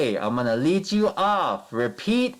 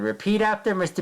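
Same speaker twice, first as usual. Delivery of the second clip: ordinary talk, nothing marked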